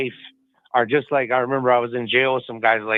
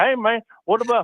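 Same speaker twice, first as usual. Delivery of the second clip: mocking put-on podcast host voice, higher pitch; 11 semitones higher than usual. Doing an imitation of how the Tigs Bits podcast sounds: imitating the Tigs Bits hosts. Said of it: "That's a good impersonation".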